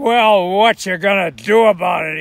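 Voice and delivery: very loud, menacing tough-biker voice. Telling a joke where a biker grabs his drink at a bar, retelling a menacing threat. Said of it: "he says menacingly".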